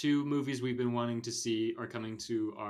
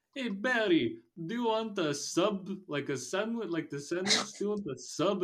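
high, silly, put-on Eastern European accent; 9 semitones higher than usual. Explain why you don't find a silly character funny, mimicking him in a NoHo Hank voice. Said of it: "And he just talks like this".

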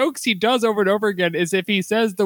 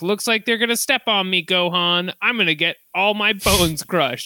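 gleeful, plucky, thrilled and cheerful tone; 2 semitones lower than usual. Imitating a cartoon hero's line from an episode: imitating Goku, gleeful. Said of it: "gleefully being killed".

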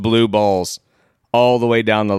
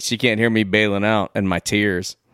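ordinary talk, nothing marked

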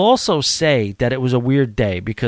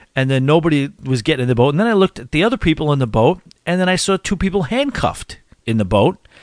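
plain

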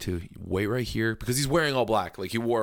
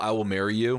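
normal talking voice

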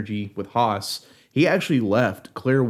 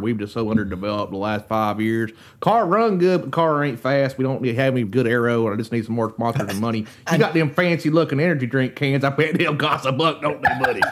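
put-on southern drawl. Podcast host on his underfunded car needing sponsors, Mater voice. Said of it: "You sounded like Mater from Disney Cars".

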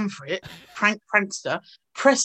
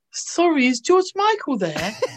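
put-on high, swooping small child's voice; 6 semitones higher than usual. Retelling asking a lady at an upstairs window for someone, like a little child. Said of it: "like a little child".

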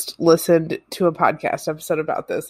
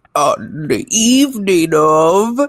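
loud, creepy put-on storyteller voice; 6 dB louder than usual. Reading a text aloud, in a put-on creepy voice. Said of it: "My creepy voice".

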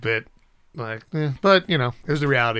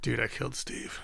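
put-on exhausted voice, quieter; 12 dB quieter than usual. Retelling what Chris said on coming home: imitating exhausted Chris. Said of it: "he's all exhausted".

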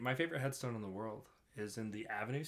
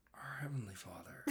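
put-on old man voice with churchly praying cadence; 4 dB quieter than usual. Telling someone they sound like their grandpa, the speaker imitates grandpa talking at church. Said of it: "sound like my grandpa when he was talking at church".

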